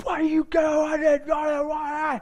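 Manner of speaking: mock very high-pitched, shrill shouted outburst. Retelling a driver who yelled at the speaker with his windows down: imitating someone yelling. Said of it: "Just yelling".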